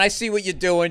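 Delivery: put-on harsh, scornful, trashing voice. Retelling the remembered voice that trashes new bits: imitating Patrice trashing him. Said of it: "Just trashing me, going".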